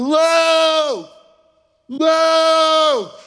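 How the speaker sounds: very high calling scream, stretched long, acted out. A father retells running into a building to find his son, retelling screaming a name. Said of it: "I'm screaming".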